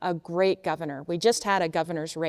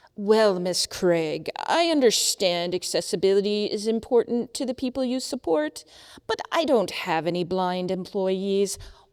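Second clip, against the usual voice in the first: mock condescending, superior, patronizing, talking-down tone; 2 semitones higher than usual. Retelling what a large agency CIO said to her, mock-patronizing voice. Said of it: "in the most patri- patronizing voice possible".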